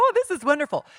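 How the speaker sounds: very high, swooping, faked delight and enthusiasm. Showing how one pretends a book is great to its author: pretending a book is great. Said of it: "pretend they're great when you're talking to the person and go".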